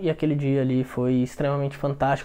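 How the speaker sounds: sorrowful, gloomy, soft downcast tone. Telling a happy story while the tone contradicts the words: sad tone. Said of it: "na verdade o meu tom de voz é de um dia triste".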